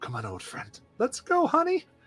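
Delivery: quick, very high-pitched whisper. Narrator voicing a woman urging on an old friend, whispering. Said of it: "she kind of whispers".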